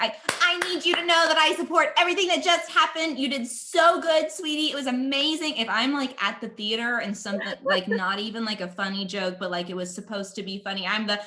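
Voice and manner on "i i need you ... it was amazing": very high, over-eager, gushing enthusiastic voice. Acting out being a really enthusiastic audience member: mock over-eager enthusiasm. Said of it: "a really enthusiastic member of the audience".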